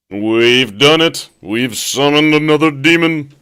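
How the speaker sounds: very loud, very high, booming game-show announcer voice. Speaking to a listener, slipping into a Don Pardo voice. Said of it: "there goes the Don Pardo voice again".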